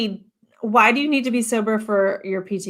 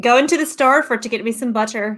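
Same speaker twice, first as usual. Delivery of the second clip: fake Irish accent on one phrase; 3 semitones higher than usual. Saying hello on Saint Patrick's Day: put-on Irish accent. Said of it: "thing in Irish that I say".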